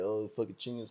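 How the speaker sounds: teasing, mocking tone. Retelling how they mocked a coworker's phrase: mocking a coworker's phrase. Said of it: "I would be like".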